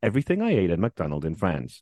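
put-on influencer voice with swooping pitch. Mocking travel food-review videos, the speaker is imitating an influencer voice. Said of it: "they've all got the same voice. / You got the voice dead on there".

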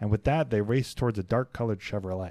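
ordinary delivery

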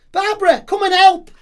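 loud, high-pitched call. Acting out a character calling out to Barbara for help. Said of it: "Calls out to Barbara".

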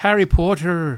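put-on Dutch accent. Describing what he says in the script, speaker quotes him in a Dutch accent. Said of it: "he goes Dutch at one point".

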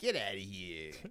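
put-on New York accent. Acting out a man refusing someone who asked him for food, New Yorker accent. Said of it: "He's a consummate New Yorker".

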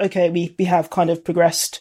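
plain

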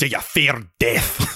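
put-on slow, deliberate Scottish accent. Retelling how the actor played his line on set: Bill Nighy Scottish accent. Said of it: "I can't do Dutch, but I can do Scottish".

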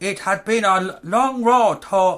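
rough South African accent. Trying out an accent while another person critiques it, attempted south african accent. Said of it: "It starts off Chinese, then it goes into South African".

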